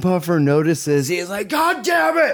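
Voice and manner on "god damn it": put-on, loud, higher-pitched yelling. Retelling how Puffer reacted to the dog: imitating Puffer yelling. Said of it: "You know how loud he gets".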